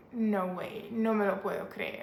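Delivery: ordinary talk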